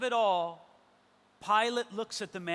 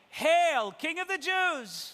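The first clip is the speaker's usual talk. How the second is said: high, loud, mocking cry. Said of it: "Then they start mocking him, saying".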